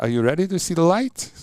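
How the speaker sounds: high, wide-ranging German accent.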